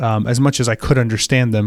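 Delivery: ordinary delivery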